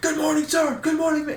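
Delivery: mock, very high, shrieked boot-camp-style scream. Recalling sitting in boot camp position, greeting everyone who walked by: retelling a screamed greeting. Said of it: "So I was just screaming".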